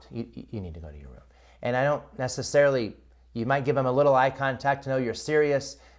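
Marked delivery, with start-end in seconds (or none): 0.1-1.2 very low, very quiet dropped voice. Showing how to tell a child to go to their room: voice dropped low. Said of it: "you see how my voice just dropped".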